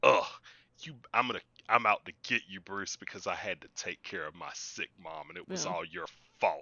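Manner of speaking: the worst whining, aggrieved villain-style rant. Mocking a villain's threat to bruce: imitating the worst kind of whiny. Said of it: "the worst kind of whiny".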